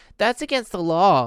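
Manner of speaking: tiny, high-pitched, teasing, mocking little voice. Pete echoes Chuck's warning back at him, tiny voice mimicking Chuck. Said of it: "Pete mimicked him in a tiny voice".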